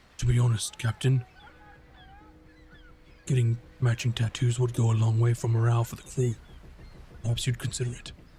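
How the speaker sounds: confiding stage whisper, like telling a secret. Describing a crew member confiding in the captain, the speaker acts out his whispering. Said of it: "he sort of whispers to you".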